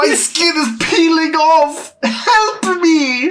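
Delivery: outright screaming cry, high-pitched. Voicing a character whose skin is peeling: high-pitched scream. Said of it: "was I so high pitched you didn't register?".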